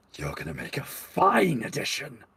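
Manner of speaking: eerie, strange possessed voice, different from her own. Voicing an elven woman whose eyes roll back: possessed different voice. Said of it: "a different voice comes out of her".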